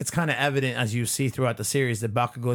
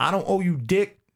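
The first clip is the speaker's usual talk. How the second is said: furious, prideful yell in a raised pitch; 6 semitones higher, 3 dB louder than usual. Recounting a scene where Bakugo runs up, doing a mock-angry Bakugo yell. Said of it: "one angry ass Bakugo runs up".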